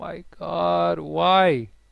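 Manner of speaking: panicked, freaking out, with drawn-out disbelief. Reacting as donations arrive but it still doesn't work: panicking. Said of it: "I'm panicking".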